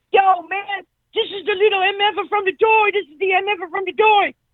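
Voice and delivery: put-on shrieked call, very high and excited. Retelling how a window washer called to his buddy: imitating someone screaming. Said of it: "he's screaming to his buddy on the other side of the street".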